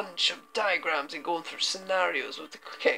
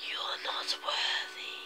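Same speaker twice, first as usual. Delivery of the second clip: hushed whisper. A voice from behind speaks as the dagger is picked up, whispered. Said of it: "you hear a voice from behind you whisper".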